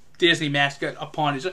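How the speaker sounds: normal talking voice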